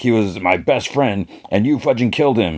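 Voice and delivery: ordinary delivery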